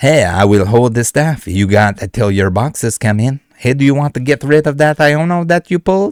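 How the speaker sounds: French cowboy voice. Reading out a buyer's message, giving him a french cowboy voice. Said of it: "give him a French cowboy voice".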